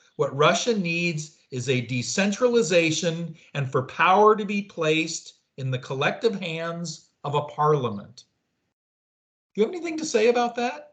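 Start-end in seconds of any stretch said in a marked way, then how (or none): none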